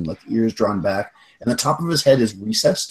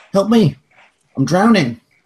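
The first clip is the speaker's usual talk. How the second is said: put-on very high young boy's voice, raised; 10 semitones higher, 5 dB louder than usual. Voicing a creature under a bridge calling for help: young boy's voice. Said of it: "It sounds like a young boy".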